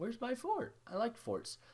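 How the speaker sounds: high, soft voice breaking mid-line. Looking for a missing fort and not finding it, voice cracking. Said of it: "did my voice just crack there?".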